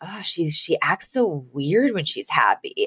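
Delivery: soft half-whisper with no voice. Retelling a favorite line from the show: imitating Gracie half-whispering. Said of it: "kind of whispers to Brighton".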